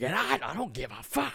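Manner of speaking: long high-pitched screaming. Recalling a stranger yelling on their street, the speaker imitates his screaming. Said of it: "He's just screaming".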